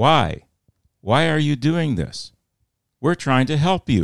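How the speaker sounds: high-pitched screaming. Retelling how the wire service reporter screamed at the attackers: imitating someone screaming. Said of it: "she screams".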